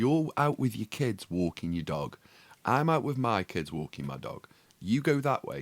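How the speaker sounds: normal talking voice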